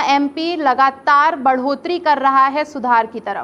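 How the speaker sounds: usual speaking voice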